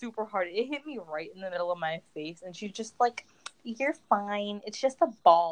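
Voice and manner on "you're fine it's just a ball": put-on snide, snarky, sarcastic tone. Retelling what a girl said after a volleyball hit: imitating a snarky remark. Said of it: "she said it like it was snarky".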